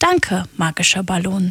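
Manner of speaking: ordinary delivery, nothing marked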